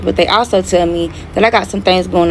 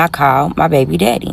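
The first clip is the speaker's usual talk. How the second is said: ordinary talk, nothing marked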